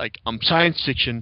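science stressed and said slowly. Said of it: "emphasis on the science".

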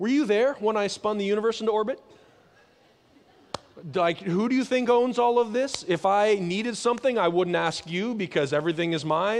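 obnoxious, sweeping, put-on sarcastic voice. Quoting God answering people who talk about what they can't do: put-on sarcastic God voice. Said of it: "He'll go like".

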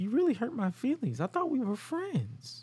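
very high, swooping pop-star singing voice. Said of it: "in the most [name] voice".

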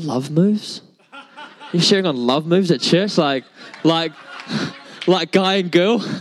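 puzzled, baffled tone full of disbelief. Retelling a friend's reaction to the sermon title: imitating Ricky looking puzzled. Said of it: "he looked at me real funny and he's like".

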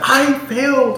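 put-on sobbing, very high tearful crying voice. Retelling a woman on a table saying she failed, imitating her crying. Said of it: "And she's like crying".

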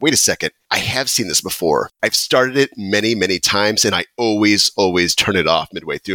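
ordinary talk, nothing marked

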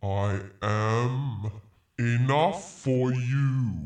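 divine character voice. Acting out the story of Moses, speaking as God in a God voice. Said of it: "where's that God voice".

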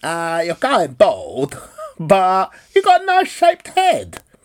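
loud, swooping put-on Italian accent. Retelling what an italian barber told them at nineteen, italian accent. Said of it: "you're going to have to forgive this accent".

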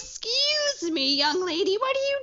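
very high, shrill, drawn-out scolding scream. Imagining a shrill mother at the Battle of Blackwater, mock screaming from the battlements. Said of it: "she was just like screaming from".

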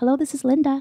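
sweet, high-pitched telephone voice. Answering her client phone when it rang: sweet put-on phone voice. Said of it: "I had my phone voice too".

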